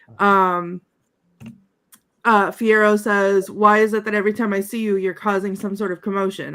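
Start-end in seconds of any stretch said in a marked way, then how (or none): none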